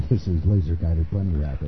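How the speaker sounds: put-on very deep voice. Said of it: "He went from having a high-pitched voice, and then all of a sudden it was like this".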